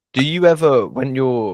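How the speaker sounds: voice breaking, cracking up high. Starting to ask the other speaker a question, voice cracking. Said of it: "my voice just broke".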